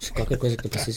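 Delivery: low, very soft, creepy soft-spoken teacher voice.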